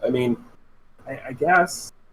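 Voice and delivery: unenthusiastic. Voicing a hesitant character agreeing to go to the House of Mirrors: not excited. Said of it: "You don't sound very excited".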